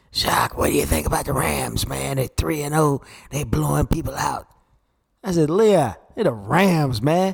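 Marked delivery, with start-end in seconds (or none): 0.1-4.4 raspy, rough-edged voice from the throat. Retelling what Leon the Barber said on the show, in a raspy Leon the Barber voice. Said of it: "Leon goes in that raspy voice".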